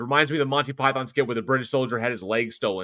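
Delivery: ordinary talk, nothing marked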